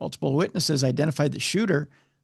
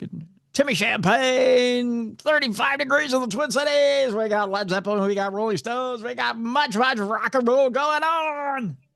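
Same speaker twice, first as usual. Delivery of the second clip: put-on top forty radio dj voice; 9 semitones higher than usual. Showing how the puker voice goes on the air, Timmy Champagne puker voice. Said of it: "you could do the puker voice".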